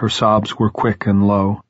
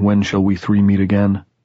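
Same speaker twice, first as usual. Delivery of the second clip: plain reading voice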